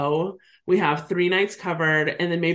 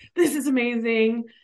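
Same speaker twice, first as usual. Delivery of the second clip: very excited, higher pitch, slower; 5 semitones higher than usual. Speaker retells winning a radio prize, retelling a super excited reaction. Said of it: "I'm like super excited".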